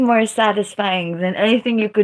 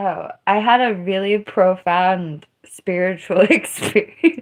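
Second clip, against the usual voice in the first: plain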